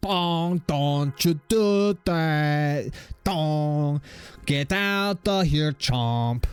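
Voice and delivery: high, very slow, with every word drawn out. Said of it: "I think that's what he said".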